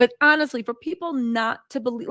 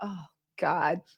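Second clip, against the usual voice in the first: mock, soft, fed-up, exasperated sigh; 6 semitones lower, 8 dB quieter than usual. Retelling a man's reaction with an hour before the plane: imitating fed-up exasperation. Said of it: "he finally got so fed up with her".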